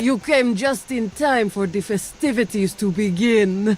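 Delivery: put-on Russian-accented character voice. Narrator voicing a spacer perched on a crane, russian accent. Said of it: "Russian accent".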